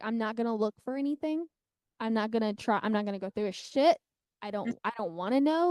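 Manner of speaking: ordinary talk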